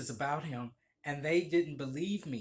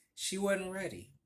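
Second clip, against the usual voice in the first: ordinary talk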